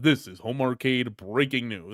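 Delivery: deep, low news-announcer broadcast voice. Showing the voice wanted for the show's breaking-news sounder, deep news-announcer voice. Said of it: "We need a deep voice for the".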